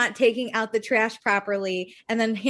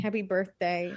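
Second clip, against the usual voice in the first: imitated very sad voice, quieter; 3 semitones lower, 8 dB quieter than usual. Retelling how someone said happy birthday: imitating the saddest voice. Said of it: "in the saddest voice".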